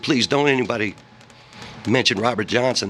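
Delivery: ordinary delivery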